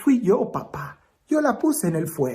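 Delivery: normal talking voice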